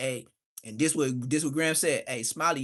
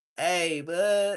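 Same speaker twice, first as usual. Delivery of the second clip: speech mixed with laughter; 2 semitones higher than usual. Retelling a man greeting someone on the phone, imitating laughing while talking. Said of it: "Blood started laughing like".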